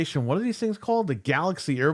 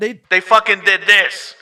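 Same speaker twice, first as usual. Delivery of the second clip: loud, tinny radio sound effect voice. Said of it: "use the radio sound effect for that".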